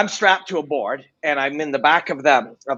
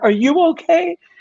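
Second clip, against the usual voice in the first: very high, tearful, worried, put-on crying voice. Retelling a phone call, quoting her asking if he's okay: imitating someone crying. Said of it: "And she's crying".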